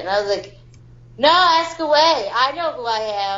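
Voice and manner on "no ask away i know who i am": combative, confrontational, aggressive-sounding delivery. Retelling own past answer to someone's question: retelling own aggressive reply. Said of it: "That sounded aggressive".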